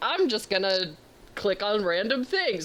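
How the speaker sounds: ordinary delivery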